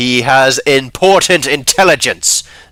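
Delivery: stern, very loud, slow voice. Narrator voices a woman replying to others, stern voice. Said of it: "she says in a more stern voice".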